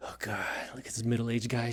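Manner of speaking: put-on teenage voice, sounding about eighteen. Voicing what an eighteen-year-old self would say: imitating eighteen-year-old self. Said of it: "My eighteen-year-old self would be like".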